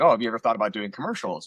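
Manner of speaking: ordinary talk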